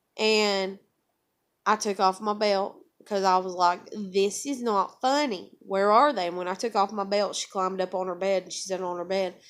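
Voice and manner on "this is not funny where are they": mad, angry, stern, no-nonsense tone. Retelling a confrontation with a daughter: imitating own angry demand. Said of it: "I'm mad now".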